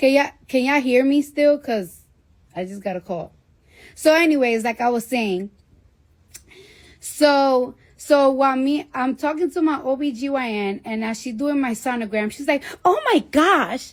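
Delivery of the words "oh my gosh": put-on Staten Island girl accent, exclaiming. Retelling her OB-GYN's reaction during a sonogram, imitating a Staten Island girl.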